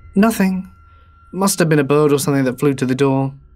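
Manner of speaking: plain reading voice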